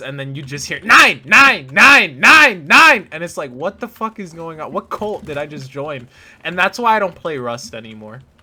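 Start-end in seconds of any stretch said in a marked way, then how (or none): 0.8-3.1 very loud, drawn-out yelling in bad German accent. Recalling Rust players yelling at them, imitating yelling in a bad German accent. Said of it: "with like shitty German accents just yelling nine at you".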